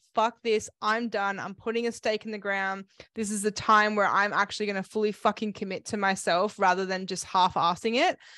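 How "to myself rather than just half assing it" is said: ordinary talk, nothing marked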